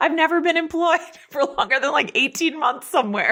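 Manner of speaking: very high, choked-up, on the verge of crying. Speaker talking about their job, about to cry. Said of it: "now I'm going to cry".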